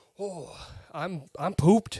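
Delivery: put-on mock Midwestern accent. Imitating how he'll sound once recording ends: midwestern accent. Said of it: "adopt like a Midwestern accent".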